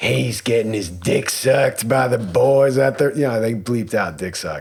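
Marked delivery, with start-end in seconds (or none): 0.0-3.1 put-on drunken granny voice, higher pitch. Retelling what a Dallas housewife said: imitating a drunk Nana voice. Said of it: "she said it in very, like, Nana voice".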